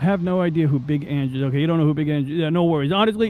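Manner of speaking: usual speaking voice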